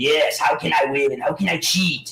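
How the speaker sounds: slow, scheming, evil emperor voice. Act out Bill Belichick in the back as an Emperor Palpatine voice. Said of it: "I look at him like Emperor".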